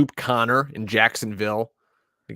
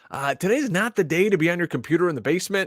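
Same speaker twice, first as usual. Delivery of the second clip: mock high-pitched scolding yell; 8 semitones higher than usual. Retelling what his wife told him about the computer: imitating a wife yelling. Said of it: "My wife yelled at me".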